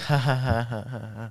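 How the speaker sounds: soft, fading awkward chuckle. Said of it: "that awkward chuckle".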